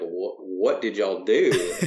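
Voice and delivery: slow, laid-on-thick Arkansas drawl. Retelling what the recording engineer kept saying: imitating Barry Pointer's thick Arkansas accent. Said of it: "he had a really thick Arkansas accent".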